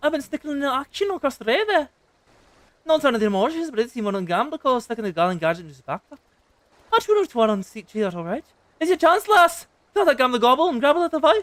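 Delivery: put-on Irish accent. Voicing a member of the Rogues Guild: Irish accent. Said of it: "the Rogues Guild has become Irish".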